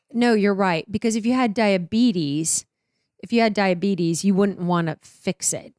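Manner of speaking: usual speaking voice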